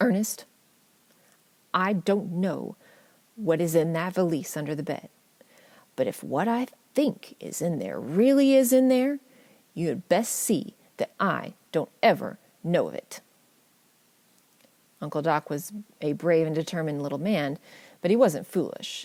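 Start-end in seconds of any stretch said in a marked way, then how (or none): 0.0-13.2 mock commanding, very forceful, firm, no-nonsense tone. Retelling Grandma's warning about the valise: imitating a very forceful tone. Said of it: "spoke to him in a very forceful tone of voice".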